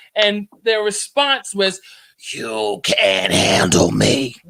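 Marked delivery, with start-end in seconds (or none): 2.4-4.3 very deep, slow, dragged-out demonic voice. Recounting how a person they were dealing with responded, imitating a demonic voice. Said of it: "they did it in a voice like that".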